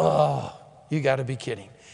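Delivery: murmured under the breath. Showing what a selfish, dissatisfied murmur sounds like: murmured under the breath. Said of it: "a murmur".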